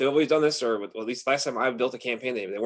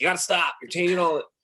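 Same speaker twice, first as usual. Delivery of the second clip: mock yelling, hard and high-pitched; 5 semitones higher than usual. Retelling what was said to a guy who called in: retelling a past yell. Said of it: "yelling at him".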